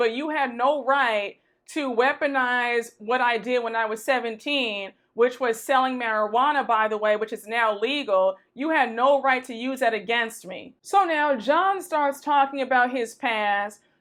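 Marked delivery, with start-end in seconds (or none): none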